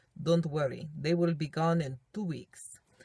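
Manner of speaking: bad, failed put-on Spanish accent. Retelling what a regular guy whispered in your ear, bad Spanish accent. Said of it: "that wasn't really a Spanish accent".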